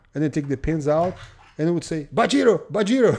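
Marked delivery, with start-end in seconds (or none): 2.2-3.2 put-on loud Japanese accent on the Portuguese word. Retelling how a man tried to say a Portuguese word, in a Japanese accent. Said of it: "He said with a like Japanese accent".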